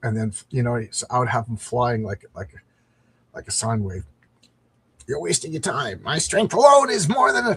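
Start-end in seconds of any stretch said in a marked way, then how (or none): 5.1-7.6 put-on, high dinosaur creature voice. Voicing the dinosaur in the scene, use your dinosaur voice. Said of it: "That's my dinosaur voice".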